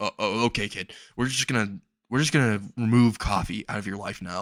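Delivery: ordinary delivery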